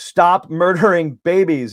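sudden, high, ringing mock shouted yell. Recounting being in the Capitol rotunda, the speaker retells suddenly yelling out. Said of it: "I just yelled out".

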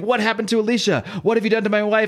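high put-on screaming, repeated over and over. Retelling a comic scene where a man accuses someone: retelling a scream. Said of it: "He's screaming".

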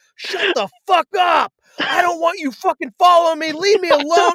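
mock very high, loud, flipped-out tirade. Recounting a movie, speaker acts out the man yelling at his parents, imitating someone flipping out. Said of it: "He flips out".

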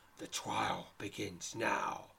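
snarling, ogre-like snarl. Narrating a story, reading the great ogre's line to you, snarling. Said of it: "he snarls".

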